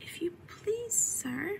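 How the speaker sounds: small, timid, hushed voice, pitched well up. Desperate for help, she addresses a passing rabbit in a low, timid voice. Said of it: "she began in a low, timid voice".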